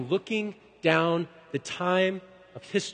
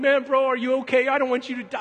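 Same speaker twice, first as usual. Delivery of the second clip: acted-out crying, pitched higher; 6 semitones higher, 4 dB louder than usual. Speaker retells talking to his brother in the bunk above, retelling own crying. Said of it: "I'm like crying".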